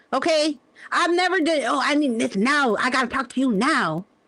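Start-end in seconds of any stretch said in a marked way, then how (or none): 1.6-4.0 desperate, urgent pleading tone. Mocking a desperate request to talk: imitating someone desperate. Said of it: "That's desperate".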